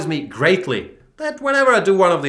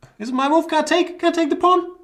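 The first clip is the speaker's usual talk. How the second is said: very high, pitched-up, falsely enthusiastic voice. Playing a chess game, the speaker asks about their move in a high-pitched voice. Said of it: "Why did my voice get so high pitched?".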